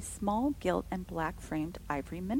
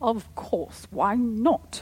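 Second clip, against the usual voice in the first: stern, loud, very slow, drawn-out exclamation; 4 semitones higher, 8 dB louder than usual. Caroline answers Rebecca's question about the light, sternly crying out. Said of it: "cried Caroline sternly".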